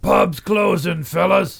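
high, rough, loud shout. Reading a pub story aloud, a character calling out from the bar, shouted. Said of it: "Joe shouted from the bar".

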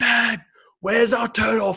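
very high, loud yelling shout. Retelling being lost in a blizzard on the roadside: imitating a shout. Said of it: "we're shouting at each other".

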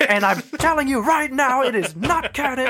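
high, mock proclaiming, declaiming voice.

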